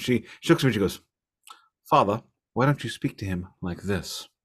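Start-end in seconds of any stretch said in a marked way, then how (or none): 1.9-4.3 put-on upper class English accent, lower and quieter. Speaker retells his child speaking to him, in an upper class english accent. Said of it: "my child does a pretty good upper class English accent".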